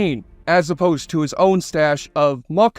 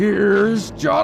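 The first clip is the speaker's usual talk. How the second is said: put-on manic movie-villain voice, higher; 4 semitones higher than usual. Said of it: "My excellent impression of Jack Nicholson in The Shining".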